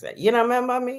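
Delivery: put-on Jamaican accent. Retelling a man who stared at her and asked if she remembered him, jamaican accent. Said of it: "I'm going to use the Jamaican accent".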